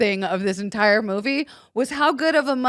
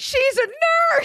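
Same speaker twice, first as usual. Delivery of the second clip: put-on shrill shout at very high pitch. Recounting the end of a movie, the speaker retells a character's yell. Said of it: "when he yells out like".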